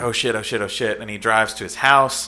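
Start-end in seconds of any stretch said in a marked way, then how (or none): none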